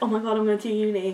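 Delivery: mock frantic, worried, panicked and flustered blurt. Imitating viewers who are panicking about going to uni: imitating panicking viewers. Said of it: "you're panicking and you're".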